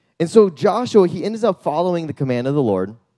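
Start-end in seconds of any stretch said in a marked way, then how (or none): none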